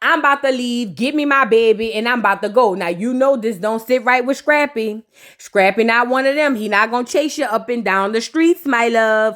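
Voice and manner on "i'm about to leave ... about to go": ordinary talk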